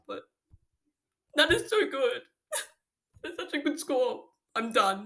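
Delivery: tearful speech, crying while talking. Student reacting to exam scores better than expected, crying while talking. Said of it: "that's a lot of crying".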